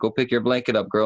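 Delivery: normal talking voice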